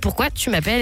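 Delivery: ordinary talk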